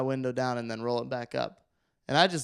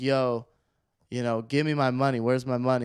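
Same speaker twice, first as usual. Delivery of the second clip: ordinary talk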